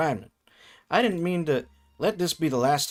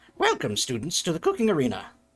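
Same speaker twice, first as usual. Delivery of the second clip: put-on sing-song voice, swooping wide and showy pitch; 2 semitones higher than usual. Reading a game character's welcome to students: Sprinkles voice. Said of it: "this voice for Sprinkles".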